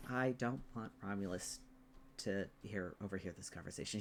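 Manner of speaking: very quiet, hushed whispered aside. Voicing a character who does not want to be overheard: speaking very quietly. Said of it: "he says, like, very quietly".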